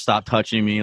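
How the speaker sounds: normal talking voice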